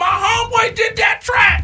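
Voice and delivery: excited yell, very high and loud. On a morning show, recounting seeing Faith, the speaker re-enacts what was yelled: retelling a yell. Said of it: "I yelled".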